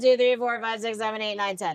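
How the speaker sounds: dead-level, flat, unvaried monotone. Explaining vocal variety by counting to ten, demonstrating monotone counting. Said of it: "it's all a big monotone one".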